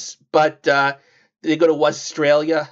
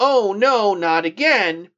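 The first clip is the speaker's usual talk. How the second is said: mock exasperated, very slow, drawn-out delivery; 3 semitones higher than usual. Recapping how an episode ends, quoting the Wuzzles: mock-exasperated Wuzzles voice. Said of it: "in an exasperated voice".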